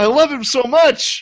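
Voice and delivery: very high, gushing adoring squeal.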